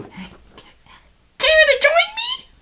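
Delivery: awful squeaky halfling voice, very high, very slow. Reading an adventure, voicing a friendly halfling calling from a thicket: horrible halfling voice. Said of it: "that is a horrible halfling voice".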